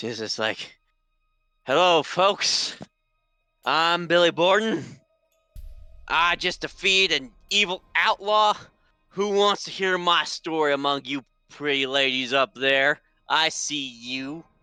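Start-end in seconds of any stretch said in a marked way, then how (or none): 1.6-14.4 put-on slow, pitched-up, boozy, boastful drunken voice. Stumbling into the boarding house as his character, drunk Billy Borden voice. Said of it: "he's just drunk".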